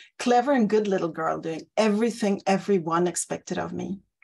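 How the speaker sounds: ordinary delivery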